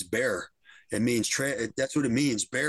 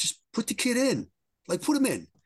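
mock swooping, animated hollering yell; 11 semitones higher than usual. Fan recounting yelling at the TV to play the rookie, retelling yelling at the TV. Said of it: "I'm yelling at the TV".

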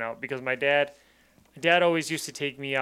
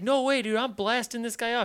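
mock screaming yell in a very high voice; 10 semitones higher than usual. Retelling a hunting trip where an armed stranger threatens a father: imitating someone screaming. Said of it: "Screaming, screaming, screaming".

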